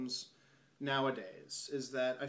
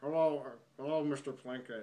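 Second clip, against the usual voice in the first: put-on creepy character voice. Showing how to do the voice of Plinkett: Plinkett voice. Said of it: "that's basically how you do the voice".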